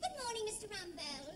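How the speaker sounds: put-on affected elocution-lesson voice. Back from elocution lessons, she greets Mr. Rumbold in her put-on elocution voice. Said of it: "taking elocution and deportment lessons".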